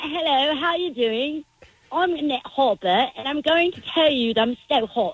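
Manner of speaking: put-on British accent drifting toward Australian. Asked by a caller to hear her British accent, the speaker obliges: fake British accent. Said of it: "Can I hear your British accent".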